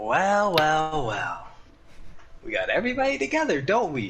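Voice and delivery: loudspeaker announcement voice, high and swooping. In an actual-play game, Justine addresses everyone from a loudspeaker; Justine over a loudspeaker. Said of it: "you kind of hear via a loudspeaker. You hear the voice of Justine. / She's not in the room. / "Yes, Commander." / you kind of hear via a loudspeaker".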